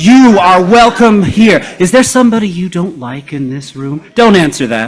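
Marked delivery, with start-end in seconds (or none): 0.0-1.6 joyful voice, loud and high. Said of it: "Say it with joy".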